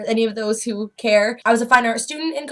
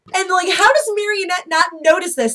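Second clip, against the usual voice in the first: ordinary talk, nothing marked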